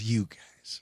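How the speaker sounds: acted, soft voice full of disgust. Retelling a woman's reaction to the speaker and her husband fist-bumping, imitating a disgusted woman. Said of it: "And she's disgusted".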